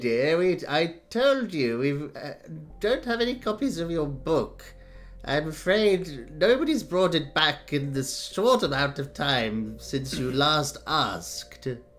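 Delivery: put-on elderly character voice. An ancient elf librarian answering a repeat request: old librarian voice. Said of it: "it's a very good librarian voice".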